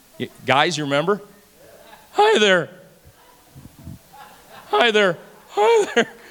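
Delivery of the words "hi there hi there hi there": squeaky, cracking, breaking preteen voice, drawn out. Imitating a sixth grader whose voice still squeaks: imitating a squeaky cracking voice. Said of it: "Your voice ain't still squeaking".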